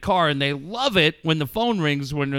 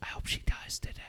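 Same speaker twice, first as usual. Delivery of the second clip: very quiet, breathy, creepy whisper. Retelling what he kept whispering to a gentleman during a show; retelling a whisper. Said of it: "I just kept whispering it to him".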